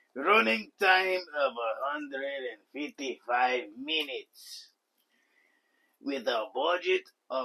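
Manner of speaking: put-on Mexican accent. Reading out a film's production facts, the speaker puts on a Cheech and Chong-style Mexican accent. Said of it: "now I'm going full Mexican".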